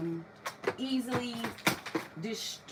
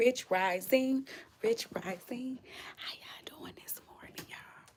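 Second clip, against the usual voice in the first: hushed whisper. Greeting viewers while others sleep nearby: whispering. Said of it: "I gotta whisper 'cause people still asleep".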